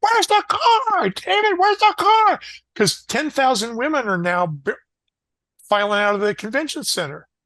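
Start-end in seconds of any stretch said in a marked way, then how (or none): 0.0-2.4 very high-pitched, shrill, loud, demanding yell. Retelling how Pat yelled at him outside the convention center: imitating someone yelling in a high voice. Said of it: "His voice got, would get real high when he was, when he was yelling".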